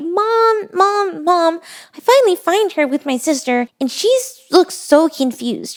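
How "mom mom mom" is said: high, tearful crying calls. Retelling how, as a lost child, they called for their mom, imitating crying. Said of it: "I'm crying and I'm like".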